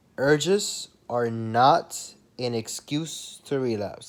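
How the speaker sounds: each word spelled out, very slow and deliberate. Announcing a key point to viewers, then saying it very slowly. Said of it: "I'm gonna say this very slowly".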